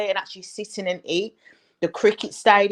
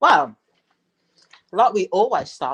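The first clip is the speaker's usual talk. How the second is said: muffled, mumbled speech while chewing, mouth full; 3 dB louder than usual. Asked to take it away, the guest starts speaking, talking with mouth full. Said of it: "I've got a mouthful of sweets".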